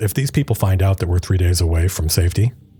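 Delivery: quiet aside. Voicing Demelza, speaking within sight of the caravan but out of earshot, quietly. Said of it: "Demelza kind of quietly".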